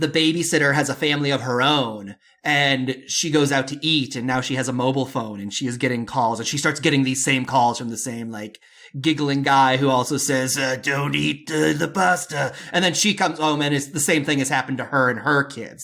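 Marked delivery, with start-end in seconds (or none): 10.8-12.5 very slow, creaky, creepy serial-killer drawl. Telling a story of a giggling caller phoning the babysitter; creepy serial-killer phone voice. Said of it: "your serial killer voice on the phone".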